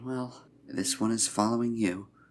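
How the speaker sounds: very soft, very quiet, hushed, under the breath. A game character speaks to the companion they are following, very quiet voice. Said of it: "in a very quiet voice".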